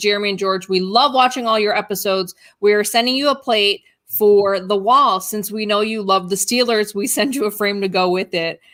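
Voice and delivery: ordinary delivery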